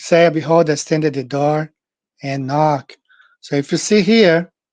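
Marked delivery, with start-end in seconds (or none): none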